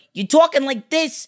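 high-pitched mobster accent. Discussing how easy the accent is to fake, demonstrating a mob accent. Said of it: "it's one of the easiest accents to do".

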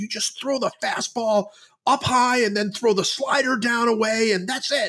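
high, screaming mock coach voice. Retelling how a pitching coach screamed advice at a pitcher on the mound: imitating a screaming coach. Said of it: "he screamed at him".

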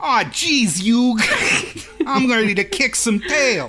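overdone cartoon New York accent. Praising a cartoon's voice cast and quoting a line; Joey Wheeler New York accent. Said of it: "barely accurate New York accents".

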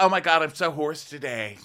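snide, high, mocking put-on parody voice. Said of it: "she's like".

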